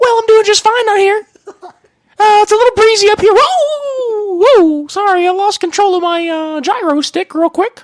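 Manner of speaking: squeaked up high, with whoa stretched out. Improvised helicopter news reporter answering the anchor, in a Mickey Mouse voice. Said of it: "I don't know why I started talking like Mickey Mouse".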